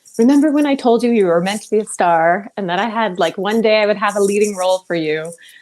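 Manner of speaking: usual speaking voice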